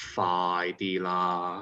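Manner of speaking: patronizing tone with strong stress on phi. Telling Daniel how to say the name: condescending, stressed "phi". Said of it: "emphasize on the phi and say it in a very condescending way".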